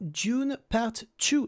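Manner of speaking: inconsistent English pronunciation. A French speaker places a bet and says the film title in a terrible, wavering English accent. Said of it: "mon accent anglais varie, c'est absolument terrible".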